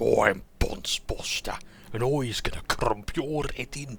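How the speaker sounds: orc voice in a Birmingham accent. A game master voicing one of his orcs, in a birmingham accent. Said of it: "I like to give them uh, Birmingham accents".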